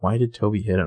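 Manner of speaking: tiny, shrunken, very small, hushed voice. Retelling a scene where Aria asks a question: imitating a very small voice. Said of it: "very small voice".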